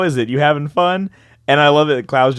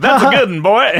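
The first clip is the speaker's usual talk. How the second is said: put-on cartoon rooster drawl, higher; 9 semitones higher, 4 dB louder than usual. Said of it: "he talks like, uh, Foghorn Leghorn".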